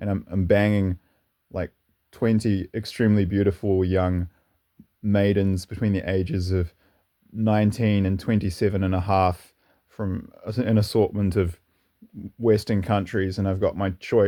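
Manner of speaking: ordinary delivery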